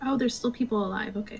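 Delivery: deflated, let-down, disappointed tone. Reacting when told it is your go and enemies remain: disappointed. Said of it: "You sound so disappointed in us".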